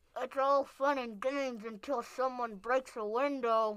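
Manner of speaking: very high, muffled, mouth-smushed voice. Narrating a barber squished against the wall by hair, in a muffled voice. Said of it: "said one of the barbers in a muffled voice".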